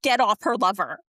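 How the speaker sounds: acted-out livid, furious, angry yelling outburst. Retelling a reaction to a show scene, imitating own livid outburst. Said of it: "but I was livid".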